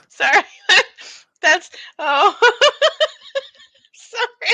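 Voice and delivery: very high, very loud giggling. Apologizing for laughing at a sheep pun, laughing while talking. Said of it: "I don't know why I'm losing it".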